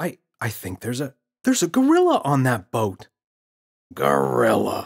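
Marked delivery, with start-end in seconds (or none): 3.9-4.9 grunted, much louder. Reading the father's reply from behind his book to his son, grunted. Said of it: "Father grunted from behind his book".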